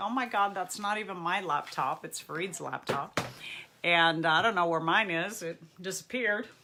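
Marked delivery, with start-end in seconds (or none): none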